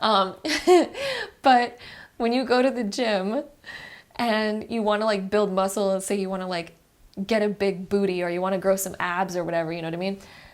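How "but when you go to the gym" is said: slow, high-pitched speech, laughing, self-amused. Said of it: "sorry, I'm laughing at myself".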